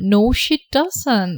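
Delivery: very slow, careful, deliberate delivery.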